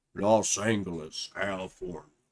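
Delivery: very low, deep, dropped bass voice. You are sick and your deep voice just comes out; speak in a deep voice. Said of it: "I hate doing my deep voice".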